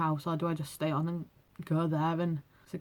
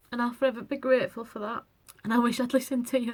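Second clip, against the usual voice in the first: high, tearful voice, speaking through tears; 6 semitones higher, 3 dB louder than usual. Speaking to someone the speaker is grateful to, crying. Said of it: "I'm sorry, I'm just crying all the time".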